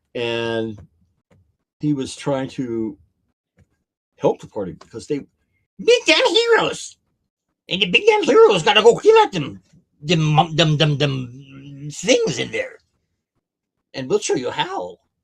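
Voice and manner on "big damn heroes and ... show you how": very loud, high, swooping, sing-song kobold creature voice. Retelling a game after others ask for the voice: kobold leader voice. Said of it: "Do the voice".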